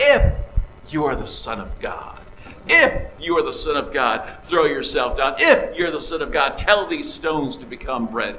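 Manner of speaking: hissing voice, words hissed out. Speaker quoting Satan's words to Jesus in the desert, Satan hissing his words. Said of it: "Satan kind of hisses out".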